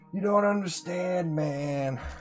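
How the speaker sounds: put-on stoner hippie voice. Slipping into a voice without meaning to, in a hippie stoner voice. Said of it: "My hippie stoner voice is starting to come out".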